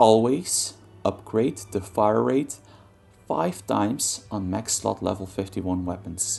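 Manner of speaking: drawn out, very slow, deliberate, word by word. Reading a key rule from a gaming guide aloud, very slowly. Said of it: "I'm gonna read it very slowly here".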